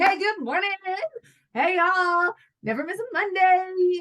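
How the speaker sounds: put-on upbeat cheer. Describing mornings after exercise endorphins, the speaker acts out an energetic greeting. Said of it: "once I have those endorphins".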